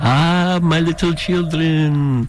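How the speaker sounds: slow, drawn-out Romanian vampire accent. Reading a radio calendar, the announcer breaks into a Dracula Romanian accent. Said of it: "talking in a Romanian accent".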